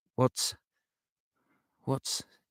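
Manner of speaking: soft, tentative, faltering, halting whisper. Narrating a story, a woman asks about her unconscious friend, in a whisper. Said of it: "she ventured in a whisper".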